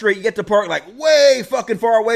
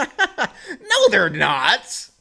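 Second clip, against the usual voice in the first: chuckling, laughing delivery with swooping pitch. Retelling a reply to a friend's remark: retelling a laughing reply. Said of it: "And I laughed and I said".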